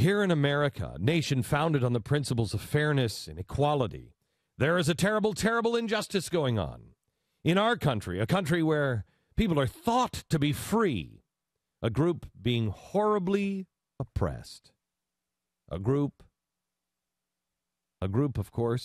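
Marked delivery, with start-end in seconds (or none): 0.0-14.7 high-pitched, swooping, sarcastic reading. Reading aloud the opening of an article about Mike, with mock sarcasm. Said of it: "Here's the sarcastic beginning here".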